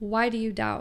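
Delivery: ordinary delivery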